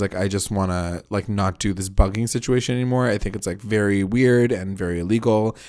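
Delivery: ordinary talk, nothing marked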